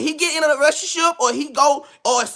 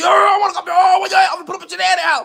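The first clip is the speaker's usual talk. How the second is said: put-on heated, worked-up, angry ranting delivery; 4 semitones higher than usual. Retelling what an angry rival says when threatening: imitating an angry man. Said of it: "He be angry as fuck".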